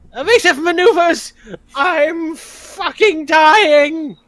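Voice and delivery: very high, drawn-out, wounded goblin voice in panic. Player's goblin fleeing after taking a pot shot: Gispy Danger, panicked. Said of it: "Gispy Danger: The Physician The Hellier Goblin / Gispy Danger: The Physician The Hellier Goblin / I'm fucking dying!".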